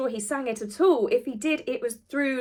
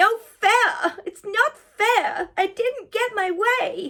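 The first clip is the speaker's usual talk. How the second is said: tiny, high-pitched voice, drawn out very slowly; 9 semitones higher, 4 dB louder than usual. A video commentator imagines what is heard from Harry's face: Harry's little voice. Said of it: "this little voice going".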